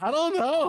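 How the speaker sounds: put-on high squeaky voice.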